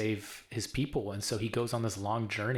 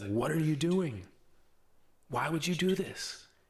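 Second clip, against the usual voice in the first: play-acted, heated angry outburst, high and swooping; 6 semitones higher than usual. Retelling a book scene where Fitz loses his temper: imitating an angry outburst. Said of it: "Fitz loses his temper".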